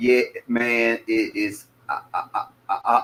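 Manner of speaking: very slow, soft, halting stutter on "I". In a group conversation, agreeing with someone, then stuttering. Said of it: "I notice I'm stuttering".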